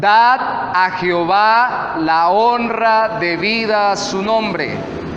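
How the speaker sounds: slow, measured reading.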